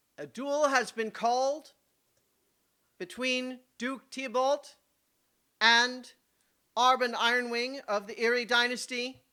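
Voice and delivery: projecting announcer voice, every word enunciated. The count steps forward to announce a duel: official announcer voice. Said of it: "my official announcer voice".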